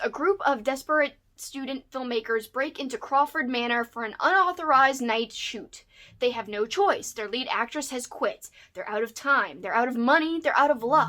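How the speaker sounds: plain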